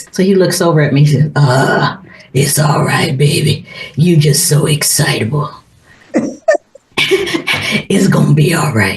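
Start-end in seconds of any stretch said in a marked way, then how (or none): 1.3-9.0 put-on deep, gravelly voice, pitched lower. Retelling what a partner said at the park: imitating a deep gravelly voice. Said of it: "deep, grovelly, naturally grovelly, uh, [name] voice".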